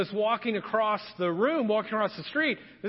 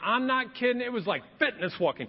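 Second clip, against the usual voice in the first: usual speaking voice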